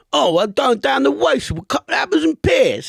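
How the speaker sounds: over-the-top bad, fake Cockney accent, pitched high. Mocking an actor who played a Cockney in a film, exaggerated fake Cockney accent. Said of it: "when he played a Cockney".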